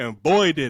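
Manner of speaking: excited shouting. Telling fellow panelists about a favorite touchdown play: excited yelling. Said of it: "I need to stop yelling at this thing".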